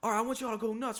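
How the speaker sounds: acted hype announcer voice. Retelling a concert where the performer stopped the beat: imitating the performer hyping the crowd. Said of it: "And he's like".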